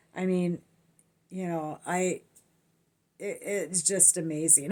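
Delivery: stumbling over words. Speaker recalling being speechless at the time, stammering. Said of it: "I'm sorry I'm stammering around".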